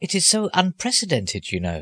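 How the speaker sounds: apologetic tone. A man adds a remark to the narrator about an unusual request; apologetic. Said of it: "he added apologetically".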